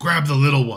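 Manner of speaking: loud, yelling voice. Running a combat, voicing a character in the fight: yelling out. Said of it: "will then yell out".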